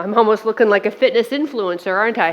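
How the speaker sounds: ordinary talk, nothing marked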